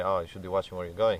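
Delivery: ordinary talk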